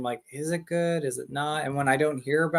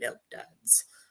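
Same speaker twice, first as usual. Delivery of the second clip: breathy, whispered put-on creature voice; 3 semitones lower, 10 dB quieter than usual. Showing a favorite quotable line: Gremlin voice. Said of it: "I like doing the Gremlin voice".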